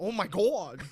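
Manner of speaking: put-on high-pitched New York accent. Imitating a fighter who scares people: Matt Serra impression. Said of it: "a New Yorker accent that's high-pitched".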